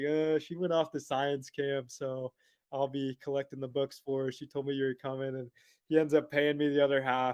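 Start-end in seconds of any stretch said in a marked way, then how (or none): none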